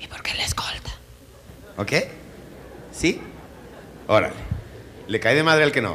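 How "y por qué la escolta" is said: hushed, breathy whisper under the breath. Acting out what people say to him about the escort: whispered. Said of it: "En voz susurrada, que es así".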